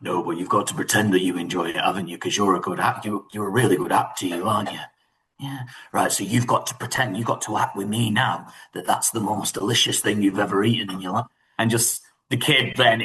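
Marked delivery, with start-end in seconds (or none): 0.0-11.2 beautiful, deep, bassy fatherly speaking voice. Acting out an actor coming in to talk to an upset child, in Ralph Ineson's beautiful bassy voice. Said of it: "in his beautiful bassy voice".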